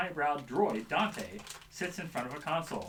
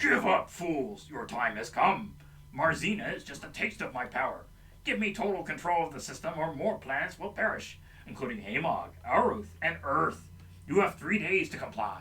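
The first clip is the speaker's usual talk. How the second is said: booming villain voice with a metallic edge. Narrating a story, voicing the villain who silences the Great Hall, booming metallic Power Master voice. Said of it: "silenced by a booming metallic voice".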